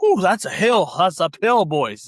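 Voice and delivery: put-on good-humoured, jovial, chatty tone. Speaker retells a man coming up behind them on a hill, imitating a jovial voice. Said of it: "He kind of had that same sort of jovial".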